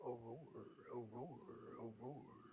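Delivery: low, dropped, deep character voice. Calling out in a put-on character voice: Mister Thomas voice. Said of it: "first time you've heard Mister Thomas's Aurora".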